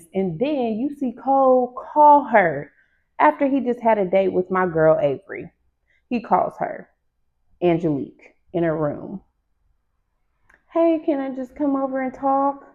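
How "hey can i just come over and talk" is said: high, feminine-sounding woman's voice. Retelling Cole calling Angelique in her room: Cole in a woman's voice. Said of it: "That sounds like a woman's voice".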